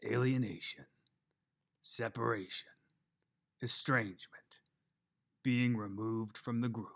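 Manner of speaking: atmospheric, evocative reading. Reading an example thesis aloud as an atmospheric reading. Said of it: "I'll try to read it in an atmospheric way".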